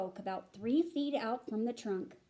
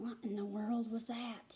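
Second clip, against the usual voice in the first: soft, trembling, quavering whisper; 7 dB quieter than usual. A narrator whispers to Rowdy after a loud cry in the silence, quavering whisper. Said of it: "In a quavering voice, I whispered".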